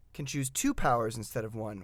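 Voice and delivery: two stressed with a falling finish. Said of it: "Why did I put the emphasis on that?".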